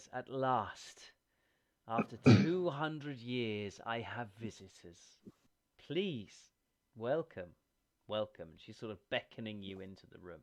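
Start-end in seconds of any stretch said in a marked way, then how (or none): 0.1-8.5 lovely, ethereal, otherworldly voice, slower. The narrator voices a woman the players meet, in a lovely ethereal voice. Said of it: "her voice is very lovely. It's quite ethereal".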